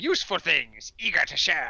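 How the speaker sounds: animated cartoon character voice. Seeing a beer called Eager to Share, speaker voices the voice in their head: cartoon voice. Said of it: "the cartoon voice going".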